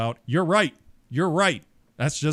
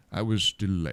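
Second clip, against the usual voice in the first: put-on old wizard voice pitched lower; 5 semitones lower, 4 dB quieter than usual. Doing the Ian McKellen Gandalf impression the other asked for: Ian McKellen Gandalf voice. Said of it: "I can do Ian McKellen from Lord of the Rings".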